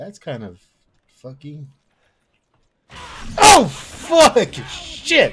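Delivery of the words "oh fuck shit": high, loud, furious swearing outburst. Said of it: "I'm getting angry".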